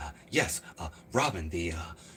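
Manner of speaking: very low, quiet, hushed, halting stop-start delivery. Recalling how Batman spoke on the old show, the speaker does an Adam West impression. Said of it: "the way Adam West spoke".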